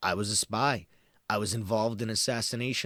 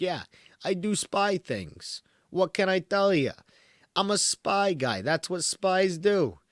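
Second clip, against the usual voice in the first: put-on New York dude accent, pitched up; 8 semitones higher, 4 dB louder than usual. Describing a spy-like guy's vibe, doing a New York accent impression. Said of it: "Because he's not from New York".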